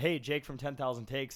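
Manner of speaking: normal talking voice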